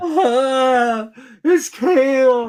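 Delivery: tearful, sobbing, high, drawn-out crying. Retelling finding a man in a room, imitating someone crying. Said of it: "And he starts crying".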